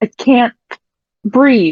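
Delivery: acted upset coughing and gasping. Retelling a scene where she comes up from underwater; acting out upset coughing. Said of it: "comes up coughing hard and looking very upset ... It's not the happy tone".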